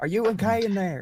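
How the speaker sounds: high-pitched shouting call. Player voicing Clovis in a tabletop game, Clovis yelling. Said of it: "He's just gonna yell".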